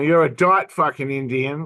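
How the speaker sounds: ordinary talk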